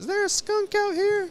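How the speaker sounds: put-on very high-pitched elderly woman accent. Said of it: "so that's why I did that accent".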